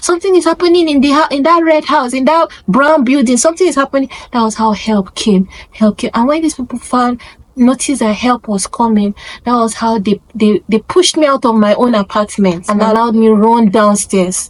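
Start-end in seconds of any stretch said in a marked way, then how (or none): 0.0-4.1 high-pitched, alarmed shouting. Retelling how a passerby ran to the junction: imitating a passerby shouting. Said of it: "come dey shout, say".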